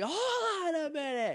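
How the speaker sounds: very high, slow, stern, angry scolding mom voice. Recapping a scene where a mother reacts after Bulk broke something, put-on angry mom voice. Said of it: "angry mom voice".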